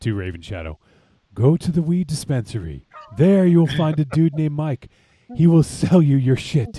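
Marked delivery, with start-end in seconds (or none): 1.3-6.8 very loud, high, raised movie-style proclaiming voice. Retelling someone's directions to another person, done in an Obi-Wan voice. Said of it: "in his best Obi-Wan voice".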